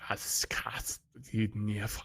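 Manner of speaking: muttering under breath. Voicing a character who mutters words in Gith: muttering under his breath. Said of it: "You hear him mutter".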